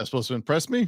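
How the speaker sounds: put-on sarcastic voice. Retelling how Dax reacted to a spooky moment, imitating Dax with a put-on sarcastic tone. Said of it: "All sarcastic".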